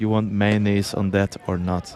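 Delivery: normal talking voice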